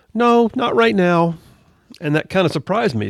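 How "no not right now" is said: put-on high, slow little kid voice. A parent retells his four-year-old's reply to an offer to open his Skittles: little guy voice. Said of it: "that little guy voice".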